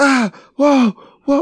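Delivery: high, loud panicked scream. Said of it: "start screaming like".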